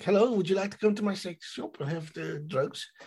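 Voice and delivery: put-on Dutch accent. Mocking how the show's characters talk, in a Dutch-sounding accent. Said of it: "They're like Dutch people".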